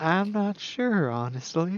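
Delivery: very slow, soft, high southern drawl. Mimicking another player's line: imitating a softly spoken southern woman. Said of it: "one of that softly spoken southern woman in a play".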